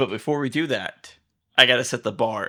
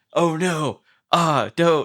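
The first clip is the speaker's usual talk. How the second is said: very slow, feeble, high, helpless whimpering voice; 6 semitones higher, 3 dB louder than usual. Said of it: "he's just like".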